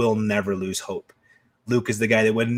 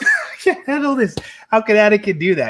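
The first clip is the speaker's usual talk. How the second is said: mock, very high, swooping blubbering like a baby; 11 semitones higher, 4 dB louder than usual. Retelling own reaction to the younglings scene: imitating own sobbing. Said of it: "I sobbed like a baby".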